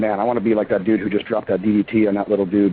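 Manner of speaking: ordinary talk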